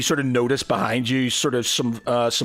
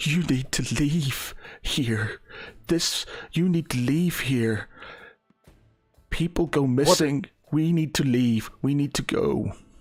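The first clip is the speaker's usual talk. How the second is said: agitated, starting to cry; 2 semitones higher than usual. Voicing a character who answers the players, crying and agitated. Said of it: "start crying and get a bit agitated".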